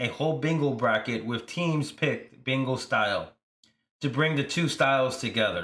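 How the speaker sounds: ordinary talk, nothing marked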